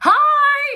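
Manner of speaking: very loud, very high, drawn-out stretched delivery. Retelling answering a phone call in a quiet changing room: loud greeting. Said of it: "and I'm so loud".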